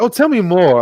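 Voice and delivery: very charming, inviting delivery, charm turned all the way up. Describing a favourite character, imitating Luthen: Luthen, very charming. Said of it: "this very charming".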